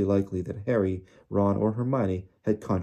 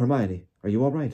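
shaky, trembling, unsteady, wavering voice; 3 semitones higher than usual. Reading fiction, a man striding toward the children asks after them, shaky voice. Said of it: "his voice sounded shaky".

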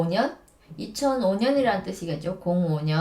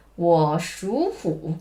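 属 said in rising second tone. Saying one was born in the year of the tiger: rising second tone on 属. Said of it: "属를 이성으로 바꿔야 되거든요".

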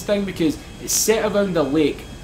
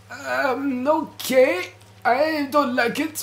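put-on elderly old grandpa voice, pitched up; 7 semitones higher than usual. Reacting after something blew up in the lobby, in an old grandpa voice. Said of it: "Why am I speaking like an old grandpa now?".

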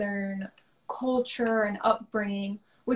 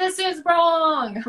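loud shrill scream, "wrong" drawn out; 7 semitones higher, 6 dB louder than usual. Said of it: "instead of screaming at someone".

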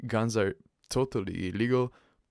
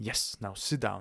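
normal talking voice

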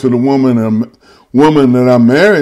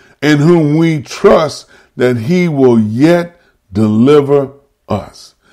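deliberate, slow, careful word-by-word reading. Rereading a bible verse aloud so listeners hear it: saying it slowly. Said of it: "let me say it slow".

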